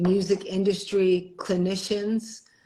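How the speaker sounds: ordinary talk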